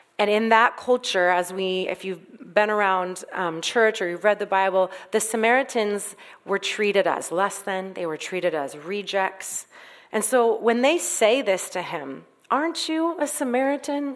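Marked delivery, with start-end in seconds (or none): 12.5-14.2 high, manipulative, passive-aggressive tone. Retelling the accusers' question to Jesus: imitating a manipulative tone. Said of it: "in a very, like, manipulative way".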